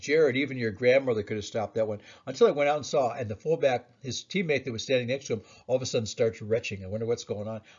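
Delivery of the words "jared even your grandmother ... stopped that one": ordinary delivery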